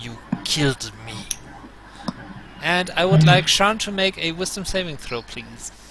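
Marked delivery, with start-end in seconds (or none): 0.0-1.1 low, rasping creature voice. Voicing a creature that glares at a player's character: raspy voice. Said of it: "there is this raspy voice".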